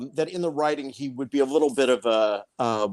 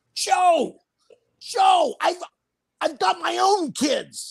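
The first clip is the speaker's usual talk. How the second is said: furious scream, higher in pitch. Retelling a scene partner losing it mid-scene: imitating Danny Stern screaming. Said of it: "Danny started screaming".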